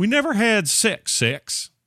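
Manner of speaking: put-on Southern drawl, very high and very slow. Voicing someone's statement, assuming they sound Southern: put-on Southern drawl. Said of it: "I'm going to do the voice, okay? I'm going to assume it's all Southern drawlish and stuff".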